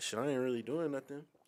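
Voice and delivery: ordinary talk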